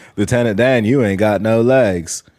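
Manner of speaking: flat deadpan, no emotion. Quoting to show the character's flat delivery: emotionless Forrest Gump voice. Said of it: "There's no emotion at all".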